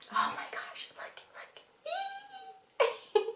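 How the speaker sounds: very quiet, hushed, breath-only whisper. Speaker suddenly spots something and points it out, whispering.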